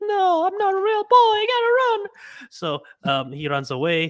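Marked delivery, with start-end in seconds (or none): 0.0-2.1 put-on very high-pitched little puppet-boy voice. Describing a version of the story, acting out the puppet: Pinocchio impression. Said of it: "that was my impression of Pinocchio".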